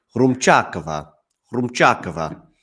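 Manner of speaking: loud, put-on Italian accent on the surname. Practising a player's name before commentating, in an Italian accent. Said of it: "He does it with his best Italian accent".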